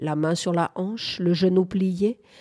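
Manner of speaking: ordinary delivery, nothing marked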